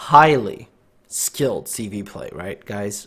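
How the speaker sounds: massive, slow, heavy sarcasm laid on thick. Commenting on own gameplay to viewers: heavy sarcasm. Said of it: "massive sarcasm in that sentence".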